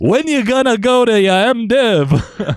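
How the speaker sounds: bad put-on south Chicago accent. Retelling what a pastor they worked with asked them, in an overdone South Chicago accent. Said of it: "the worst South Chicago accent I've ever done".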